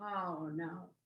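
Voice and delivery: low, soft, dismayed groan. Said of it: "And I went".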